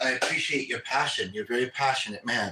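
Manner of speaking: plain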